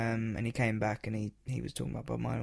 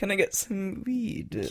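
put-on very high, barely there, half-done Jamaican accent; 9 semitones higher, 5 dB louder than usual. Acting out a kid's question to his mum, half-doing a Jamaican accent. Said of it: "teetering on the edge of doing the accent".

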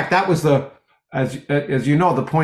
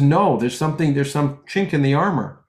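ordinary talk

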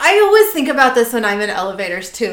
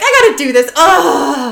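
put-on terrified voice, higher and louder; 4 semitones higher, 6 dB louder than usual. Retelling Sam's reaction in the episode: imitating Sam's terrified reaction. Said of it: "Sam's terrified expressions".

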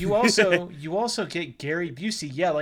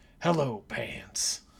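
put-on raspy celebrity voice, lower and quieter; 7 semitones lower, 6 dB quieter than usual. Quoting a line from commercials: Gary Busey impression. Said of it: "my Gary Busey impression".

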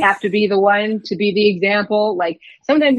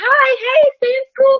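put-on voice pushed way up, high and girlish; 4 dB louder than usual. A firefighter calling out to young girls from the fire truck, pitched-up voice. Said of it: "I pitch my voice around".

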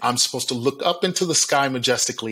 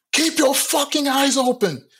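put-on piercing, shrill, very high scream; 14 semitones higher, 3 dB louder than usual. Retelling what a director yelled on a commercial shoot: imitating the director screaming. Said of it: "from the director screaming".

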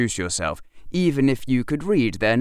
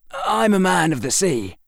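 steady, unwavering, firm, resolute, pitched high; 7 semitones higher, 3 dB louder than usual. Reading a sailor answering a woman who challenges him, firmly. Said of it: "I said firmly".

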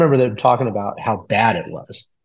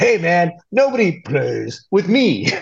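cheesy, slow, drawn-out, badly dubbed voice; 6 semitones higher than usual. Retelling a dubbed line from a TV movie edit: imitating a deep dubbing voice.

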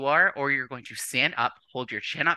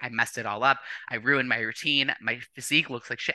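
ordinary talk

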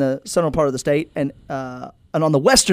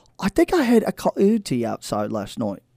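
put-on English accent with sing-song swoops; 2 semitones lower, 4 dB quieter than usual. Quoting an English man, in an English accent. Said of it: "it is my English accent".

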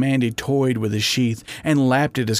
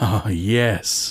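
groaning; 3 semitones lower than usual. [name] answering Mandy's teasing question, groaning. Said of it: "he groaned".

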